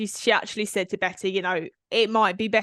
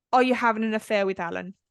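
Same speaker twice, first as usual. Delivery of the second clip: mock fast, flat, emotionless deadpan with no expression. Retelling how Betty looked up at Candy and asked her, retelling a deadpan question. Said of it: "just really deadpan".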